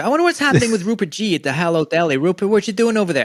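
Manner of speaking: breezy, tossed-off host manner. Retelling a TV bit, calling to the deli man: imitating David Letterman. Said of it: "David Letterman would go".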